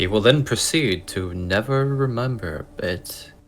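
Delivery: narration in a TV announcer style. Narrating a friend's forgetfulness as a joke: Twilight Zone announcer voice. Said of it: "the Twilight Zone announcer guy voice".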